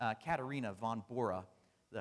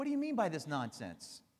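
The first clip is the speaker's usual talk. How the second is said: mock highly annoyed, exasperated, pitched-up tone; 6 semitones higher, 4 dB louder than usual. Narrating a story, the speaker voices a man's highly annoyed retort. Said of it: "highly annoyed and said".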